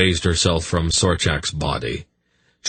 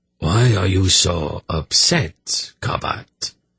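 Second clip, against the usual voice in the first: slow, hollow voice with cruel, malicious amusement. Reading a character mocking an upset follower: malicious amusement in a hollow voice. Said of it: "with malicious amusement in his hollow voice".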